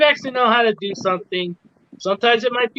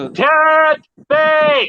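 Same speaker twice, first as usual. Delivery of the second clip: loud shout, higher pitch and louder; 6 semitones higher, 4 dB louder than usual. Showing another speaker how to say it: saying it louder. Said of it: "you gotta say it a little louder like this".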